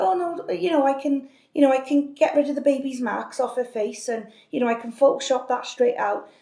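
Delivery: pushy, overbearing, insistent saleswoman tone. Retelling how a photo seller at a supermarket pressed her: imitating a pushy saleswoman. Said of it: "she was a bit pushy".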